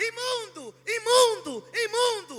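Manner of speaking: imitated shouting voice. Retelling how the leper approached Jesus: imitating a leper shouting. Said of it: "Enquanto ele grita".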